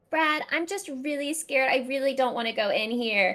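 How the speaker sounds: put-on frightened, nervous, scared girl's voice. Voicing a girl named Sally who approaches a haunted house with Brad: scared Sally voice. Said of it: "you just hear as they're approaching".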